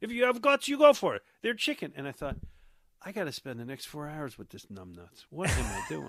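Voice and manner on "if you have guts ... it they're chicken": put-on Russian accent, shrill, very high, raised. Retelling a fellow viewer trying to impress a girl, imitating the guy's Russian accent. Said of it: "he had like a Russian accent".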